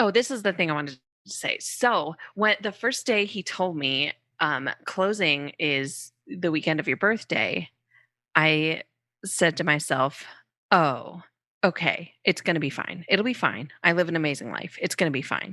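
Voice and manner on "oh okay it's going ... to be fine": mock forced determination, put-on determined tone. Recounting what she told herself on hearing of a closing on her birthday weekend, mock forced determination. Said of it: "you can hear it in the tone of my voice".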